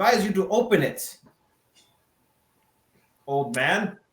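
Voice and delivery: half-hearted, held-back mild yell. Playing a paladin in a tabletop game, calling out to whoever is behind the door, yelling. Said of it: "And I'm gonna yell".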